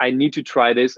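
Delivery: plain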